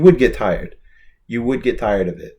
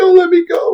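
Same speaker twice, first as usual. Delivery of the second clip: high-pitched, loud, desperate, tearful pleading tone. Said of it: "and then he goes".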